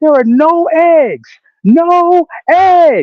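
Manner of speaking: put-on shrill, very high, very slow hollering. Retelling what a lady outside a store kept yelling: imitating someone yelling. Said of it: "Every ten minutes she was yelling".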